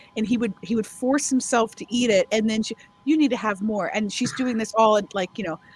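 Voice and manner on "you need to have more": put-on speaking with a Hungarian accent. Recalling a woman feeding a visitor who came over; put-on Hungarian accent. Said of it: "her Hungarian voice".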